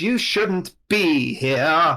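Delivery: put-on slow, high, odd, echoing old man voice. Game master voicing a voice that reaches the players' heads directly, odd echoing elderly gentleman's voice. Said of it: "Aruvian elder gentleman's voice, but it echoes oddly".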